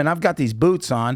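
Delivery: normal talking voice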